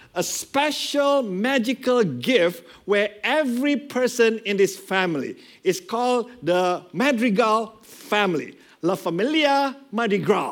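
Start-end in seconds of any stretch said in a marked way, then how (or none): 8.8-10.6 best-attempt put-on Spanish accent. Introducing a movie's family, the speaker gives its name in Spanish, best-attempt Spanish accent. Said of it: "trying my very best Spanish accent there".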